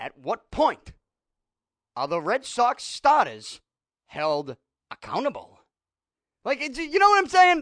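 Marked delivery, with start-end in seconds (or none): 0.0-5.6 very low droning voice with no inflection. Showing how someone else would read the same sentence you just read, in a Bob Lee robotic one-tone voice. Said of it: "Here's how Bob Lee would read this sentence".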